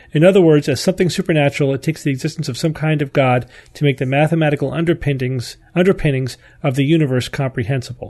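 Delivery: ordinary delivery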